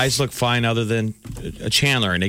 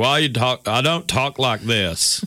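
put-on slow, drawn-out Texas accent. Speaker quotes Texas friends who deny having an accent, in a Texan accent. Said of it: "All my Texas friends are like".

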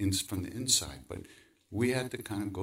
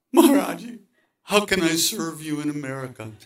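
blurted out, raised voice, high-pitched; 8 semitones higher, 11 dB louder than usual. Speaker retells the question he finally blurted out right in front of him, retelling a blurted question. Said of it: "So finally I blurted out".

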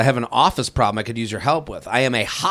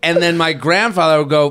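ordinary talk, nothing marked

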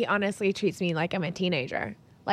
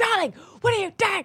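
very high, jarring, abrasive fatherly scolding; 12 semitones higher than usual. Retelling how dad reacts to an unmade bed: imitating abrasive dad. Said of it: "he'd be like".

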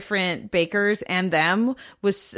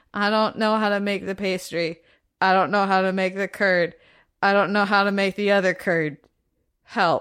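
imitated flat, deadpan delivery. Retelling a contestant stirring custard: imitating a deadpan delivery.

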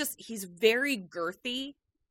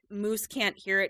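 ordinary delivery

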